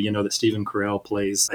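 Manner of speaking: ordinary talk, nothing marked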